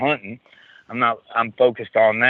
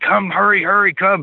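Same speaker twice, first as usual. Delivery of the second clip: very high, shrill, piercing scream; 10 semitones higher than usual. Retelling a son screaming to come see a Bigfoot track: imitating son screaming. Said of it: "screaming at me".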